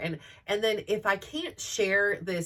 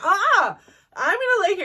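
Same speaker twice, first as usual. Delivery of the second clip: overdone, high-pitched, put-on dramatic sobbing; 12 semitones higher, 9 dB louder than usual. A mom retelling lying there in front of her family, fake crying. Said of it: "I would sit there and like fake cry".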